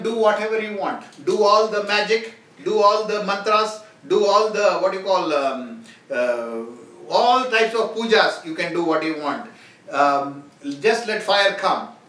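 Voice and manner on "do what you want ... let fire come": ordinary talk, nothing marked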